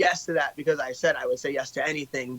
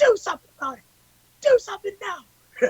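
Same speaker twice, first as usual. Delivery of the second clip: mock scream, higher pitch. Retelling standing on chairs and calling out the crowd: imitating own screaming. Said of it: "fucking screaming".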